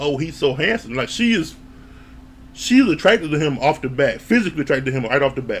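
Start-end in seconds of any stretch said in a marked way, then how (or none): none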